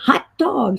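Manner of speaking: put-on British-accented delivery. Recounting a woman trying out new American slang, in a British accent. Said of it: "with a British accent".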